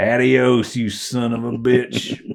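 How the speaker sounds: put-on Spanish spoken in a silly, clumsy Kansas accent. Imagining a character's farewell line: Spanish in a stupid Kansas accent. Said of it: "with a stupid, like, Kansas accent, Spanish".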